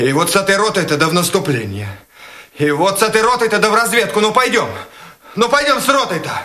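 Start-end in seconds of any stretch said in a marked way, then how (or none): 2.6-6.3 high, fast, hysterical shouting. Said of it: "Прекратите истерику!".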